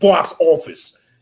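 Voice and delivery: loud, high, played-up put-on New York accent. Calling a player box office, switching into a put-on New York accent. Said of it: "I'll put on my New York accent".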